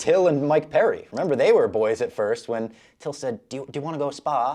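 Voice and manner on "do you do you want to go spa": put-on Scouse accent, pitched higher. Retelling what Till asked about sparring: imitating Till's Scouse accent. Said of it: "He was saying it in his accent, which, oh my God, the Scouse accent".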